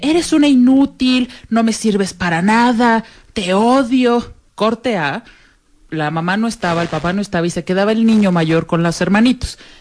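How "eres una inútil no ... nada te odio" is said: mock berating with venom on 'odio'. Telling of a violent father, acting out how he shouted at his wife: retelling a yell. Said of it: "Le gritaba a la mujer así de".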